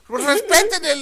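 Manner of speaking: put-on high-pitched pleading older woman.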